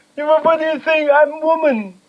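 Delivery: acted crying in a very high, tearful voice.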